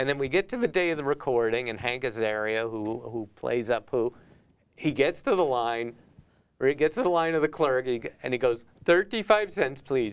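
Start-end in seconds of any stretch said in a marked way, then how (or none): 8.8-10.1 put-on Indian accent, pitched higher, slower. Recounting a recording session, the speaker imitates Hank Azaria's Apu Indian accent. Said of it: "He does it with an Indian accent".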